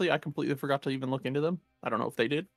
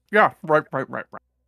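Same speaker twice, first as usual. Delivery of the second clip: put-on full-mouth speech, louder; 8 dB louder than usual. Retelling how he answered while chewing bread: imitating talking with mouth full. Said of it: "he's still chewing a mouthful of bread".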